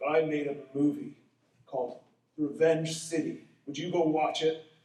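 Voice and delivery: threatening, sinister, menacing voice. Recalling a rough-looking man at six in the morning, the speaker retells his menacing question. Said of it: "he says menacingly to me".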